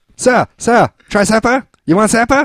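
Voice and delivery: very high, slow, drawn-out calling voice. Imitating the mall lady handing out free samples: imitating a mall sample lady.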